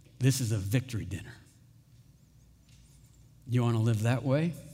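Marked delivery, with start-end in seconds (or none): 0.2-1.4 speaking in a whisper. Acting out the King of kings holding someone close: whispering. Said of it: "he would hold us and whisper".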